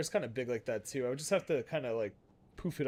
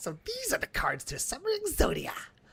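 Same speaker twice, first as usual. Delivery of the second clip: put-on character voice, very high-pitched; 13 semitones higher than usual. Imitating someone presenting his cards, the speaker uses a way higher-pitched voice. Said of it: "His voice is way higher pitched".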